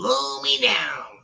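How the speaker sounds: high, rough, squeezed-out cartoon sailor voice. Talking about impressions, showing off a Popeye voice. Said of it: "I got the Popeye one down".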